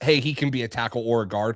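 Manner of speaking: ordinary talk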